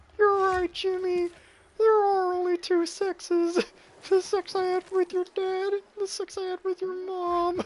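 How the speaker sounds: bad, goofy cartoon voice, very high-pitched. Joking about Jimmy and sexes: bad Carl Wheezer voice. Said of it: "my stupid ass Carl voice".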